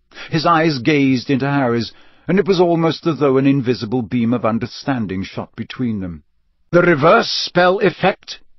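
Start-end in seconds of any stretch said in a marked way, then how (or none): 6.7-8.4 said sharply, high-pitched. Sirius cuts in as Dumbledore explains Harry's wand to him, speaking sharply. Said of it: "said Sirius sharply".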